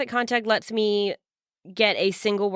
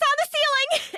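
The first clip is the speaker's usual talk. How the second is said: very high, shrill, in-character yell. Warning the party in character about a creature: yelling in character. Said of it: "I yell".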